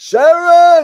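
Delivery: calling out at top pitch, very high and very loud. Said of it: "he wants an impression of [name] saying [name]".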